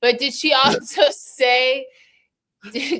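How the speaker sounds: very high, drawn-out, slow laughing through words. Asking about a caller's story while unable to stop laughing: laughing while talking. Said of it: "I can't stop laughing".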